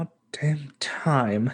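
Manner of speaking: muttered under the breath. Playing a character in the camp, the speaker mutters under his breath. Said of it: "And under his breath".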